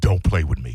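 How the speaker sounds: dead serious, very low, deep voice. Retelling a warning about a pulled knife: imitating Ian Beckles, dead serious. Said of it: "he was dead se-".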